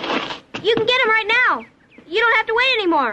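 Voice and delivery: high-pitched yelling. Speaking to an adult who asks why she is yelling, yelling. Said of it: "Why are you yelling".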